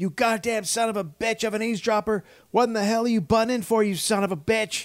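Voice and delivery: play-acted shrill screaming rant, very high. Retelling how Van Phul screamed at Frank walking out, imitating Van Phul screaming. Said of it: "Van Phul is just screaming at him".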